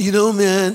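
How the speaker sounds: very slow oddball voice. Speaker voicing people he thinks are odd, in their odd-person voice. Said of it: "This is the voice of people that I think are odd".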